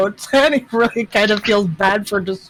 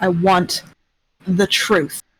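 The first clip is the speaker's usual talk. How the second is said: icy, hard, cold, very slow delivery; 3 semitones lower than usual. Pointing a crossbow at a suspect and demanding answers: hardest, coldest voice. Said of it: "the hardest, coldest voice you've ever heard [name] make".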